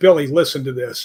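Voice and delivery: plain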